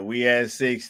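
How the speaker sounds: ordinary delivery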